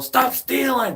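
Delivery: put-on shrill yelling, pitched very high. Speaker retells a man confronting makers of fake chains, imitating someone yelling. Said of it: "He's yelling".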